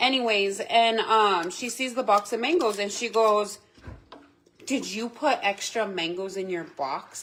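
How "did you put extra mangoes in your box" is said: play-acted, rude tone. Retelling a cashier's question about extra mangoes: imitating a rude cashier. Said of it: "Just like that, like, rude and all".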